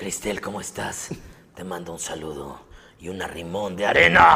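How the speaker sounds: very low anime-style character voice. By a fan's request, the speaker greets the fan's girlfriend in a Gaara voice. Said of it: "con voz de gara".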